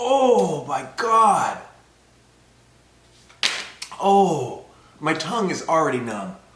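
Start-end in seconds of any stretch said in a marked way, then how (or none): 0.0-4.6 labored, loud, pitched-up, straining for breath. Eating a very spicy chip, struggling to breathe. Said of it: "It is hard to breathe".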